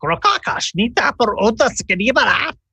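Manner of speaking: very high invented goblin speech, made-up words. Speaking as Scrim to the goblin: made-up Goblin language. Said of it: "which is goblin for".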